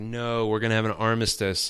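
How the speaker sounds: ordinary delivery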